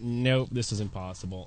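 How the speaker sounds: usual speaking voice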